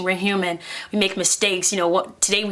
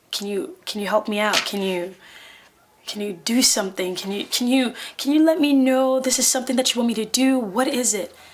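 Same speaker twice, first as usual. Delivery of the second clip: put-on tearful crying voice, higher pitch; 4 semitones higher than usual. Retelling praying to God while bawling, reenacting a tearful prayer. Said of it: "I'm crying and bawling my eyes out".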